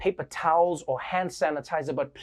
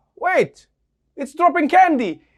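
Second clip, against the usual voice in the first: shrieking, high-pitched, full-volume yell; 9 semitones higher, 8 dB louder than usual. Imagining wedding guests seeing a drone drop candy: acting out a yell.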